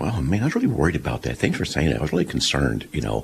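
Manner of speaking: soft, deliberately deepened voice. Retelling his reply to his late wife: lowered voice. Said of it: "I kind of lowered my voice".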